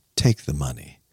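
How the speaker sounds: mock-patronizing, old-fashioned gentleman voice talking down. Retelling a man holding out his coins to the speaker, mock-patronizing tone. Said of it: "in this like very Charles Dickens patronizing".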